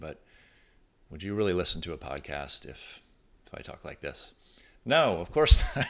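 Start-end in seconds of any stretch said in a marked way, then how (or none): 0.0-4.3 a little quieter, softer, toned-down delivery. Showing listeners how tone of voice changes delivery, a little quieter. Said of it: "if I'm a little quieter".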